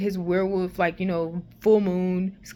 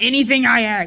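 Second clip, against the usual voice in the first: angry, goading, taunting, needling yell; 4 semitones higher, 8 dB louder than usual. Retelling how Scott taunted Stiles: imitating Scott yelling. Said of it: "then he yelled".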